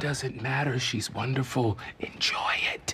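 whispering. Talking to Dre about the woman who just came in, whispering. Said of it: "Why are you whispering?".

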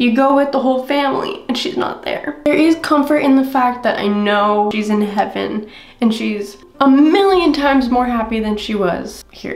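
crying voice, speaking through tears. Speaker sharing one of the hardest things this year, crying. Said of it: "I'm gonna stop crying".

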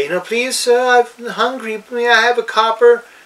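put-on very high, pleading little child voice. Describing a campaign character disguised as a child, imitating a begging child. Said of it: "begging for alms".

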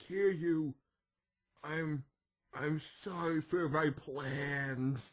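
dying voice on last breath. Acting out a defeated villain's final words: dying on his last breath. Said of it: "as he's taking his last breath, he's like".

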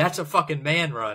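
small mock cheer, like a put-on scream. Retelling jumping up during a great run: imitating a scream. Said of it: "I jumped up and I screamed".

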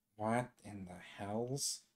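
muttering.

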